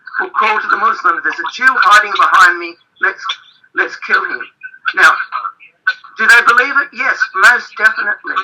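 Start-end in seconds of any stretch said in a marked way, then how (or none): none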